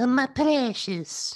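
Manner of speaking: mock creature voice, very high. Asked what Gollum says, getting into character: Gollum voice. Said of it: "I did a Gollum voice".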